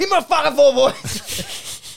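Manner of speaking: put-on coach's furious yell. Imagining the coach going over the table at people: imitating Chris Scott yelling angrily. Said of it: "start punching people, going like".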